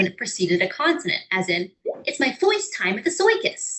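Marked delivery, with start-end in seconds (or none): 2.1-3.8 put-on high, old New York upglide on first and circus. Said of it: "Some New Yorkers even upglided the vowel R".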